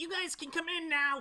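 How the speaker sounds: pitched way up, calling out. Narrating to the players outside a tent as a voice calls them in, in Slorb's very high voice. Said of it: "a very high pitched voice that says".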